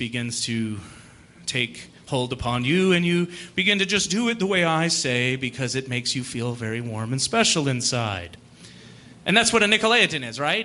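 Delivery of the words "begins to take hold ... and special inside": very low, deep, soothing, calming voice. Playing a pope or bishop addressing the listener, in a deep, calming voice. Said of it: "my deep, calming voice".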